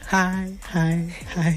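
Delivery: soft, creepy, lurking stalker voice. Imitating how the other person just greeted them: creepy stalker voice. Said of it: "Why do you sound like a stalker?".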